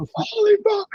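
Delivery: mock very high, thrilled, excited scream. Recalling watching an aussie win a triathlon on a laptop, retelling an excited scream. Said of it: "I'm screaming at my laptop".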